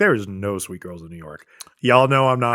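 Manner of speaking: normal talking voice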